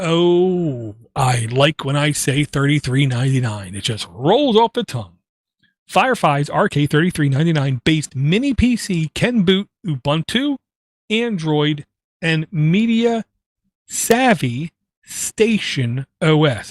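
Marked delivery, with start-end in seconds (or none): 5.9-16.7 slow, deliberate, careful word-by-word delivery. Reviewing a mini PC, reading out its name and specs, slow careful speech. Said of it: "I had to say that slow".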